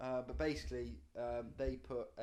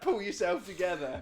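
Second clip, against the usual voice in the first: very loud, high, furious angry yell; 7 semitones higher, 13 dB louder than usual. Retelling how the speaker yelled at the lad on the boat: retelling own angry shout. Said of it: "I started shouting at him".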